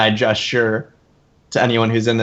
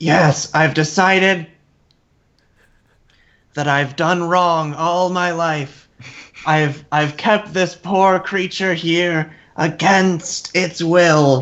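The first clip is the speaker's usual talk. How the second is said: high, stately, regal queen voice; 6 semitones higher than usual. Player in a tabletop game speaking as the Kobold Queen: Kobold Queen voice. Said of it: "try my best to imitate the voice of the Kobold Queen".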